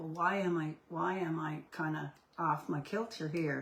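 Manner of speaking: ordinary talk, nothing marked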